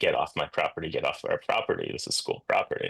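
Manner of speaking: normal talking voice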